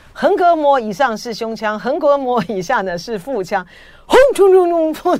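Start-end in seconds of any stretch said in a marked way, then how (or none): 4.1-5.2 very loud, high, booming put-on announcer voice. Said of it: "学李春基的这个呢".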